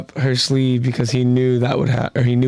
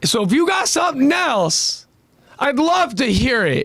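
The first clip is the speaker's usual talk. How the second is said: acted frustrated tone, higher pitch; 12 semitones higher than usual. Acting out a character's reply to her, imitating him sounding frustrated. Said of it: "he's frustrated at her lack of understanding".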